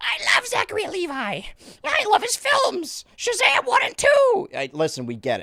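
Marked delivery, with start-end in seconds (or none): 0.0-4.5 very high-pitched put-on woman's voice. Mocking how she talks about loving an actor, in a Jade impression. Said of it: "the Jade voice ... This is what she sounds like".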